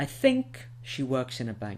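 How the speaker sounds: think emphasized and drawn out. Teaching verb stress in English, with stressed, lengthened think. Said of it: "you'll notice that I stress them".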